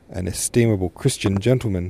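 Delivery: ordinary delivery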